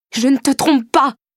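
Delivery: very high-pitched crying out. A narrator reads her own reply in an argument, crying out in turn. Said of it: "criai-je à mon tour".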